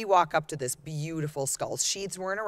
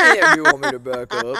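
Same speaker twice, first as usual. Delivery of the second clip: booming, raspy, very loud, rough, pitched-up voice; 9 semitones higher, 13 dB louder than usual. Retelling how a companion asked about backing up the truck: imitating John's voice. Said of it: "In that voice".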